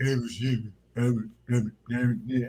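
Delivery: low, soft, mush-mouthed mumble. Imitating a basketball player who sounds like Mush Mouth: imitating Shaq's voice. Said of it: "He's like".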